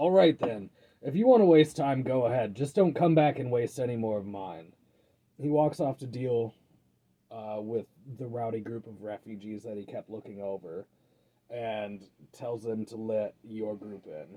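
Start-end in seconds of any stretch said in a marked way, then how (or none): 0.0-4.7 loud, fed-up, edgy, irritated tone. Voicing a frustrated guard telling the group to go ahead: speaking with an edge. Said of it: "he speaks this time with an edge".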